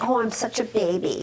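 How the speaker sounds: normal talking voice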